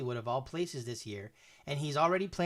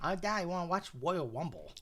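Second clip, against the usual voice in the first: put-on sing-song young child's voice; 4 semitones higher than usual. Teasing the other speaker's slurred word by imitating a daughter's voice. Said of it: "You're like my daughter".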